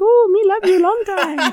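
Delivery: very high, put-on fake Chinese accent. Retelling childhood prank calls, pretending to be a girl's boyfriend, mock Chinese accent. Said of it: "pretend to be the Chinese boyfriend and be like".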